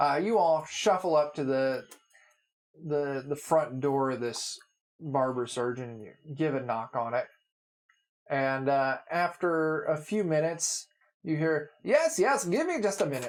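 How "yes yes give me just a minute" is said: clumsy, bad put-on German accent, pitched up. The game master voices the barber surgeon answering the door, in a bad german accent. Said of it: "I was trying for like a German".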